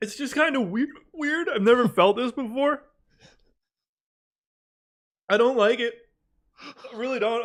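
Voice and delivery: speech broken by hiccups. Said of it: "I'm sick of hiccuping".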